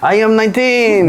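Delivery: terrible fake French accent, very high. Answering a question about your age in a bad fake French accent. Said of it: "That was my worst French".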